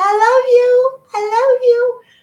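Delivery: put-on very high, silly, goofy little kid voice. Speaker showing how they say it each morning: goofy little kid's voice. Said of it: "in a goofy little kid's voice".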